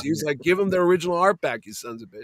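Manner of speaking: ordinary delivery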